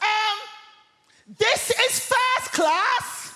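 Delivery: play-acted, very high, shrill top-of-the-lungs yell. Retelling what a woman in the first class carriage shouted, imitating a woman shouting. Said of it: "at the top of her voice, she shouts".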